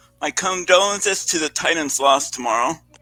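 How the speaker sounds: very low, fake solemn, fake serious sympathy. Offering condolences for a team's loss tomorrow: mock serious tone. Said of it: "most serious tone".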